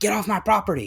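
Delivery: high-pitched shouting yell. Retelling how store greeters yell when leaving: imitating a greeter yelling. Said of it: "They always yell at me".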